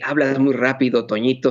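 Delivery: normal talking voice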